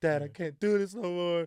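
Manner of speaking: mock crying, high, loud, tearful pleading. Retelling going to a parent about a bully: imitating own past crying. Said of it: "I'm, like, crying".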